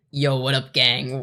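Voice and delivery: deep, slow, laid-back fake dude voice. Greeting the gang in a put-on deep guy voice. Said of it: "brought my voice down here".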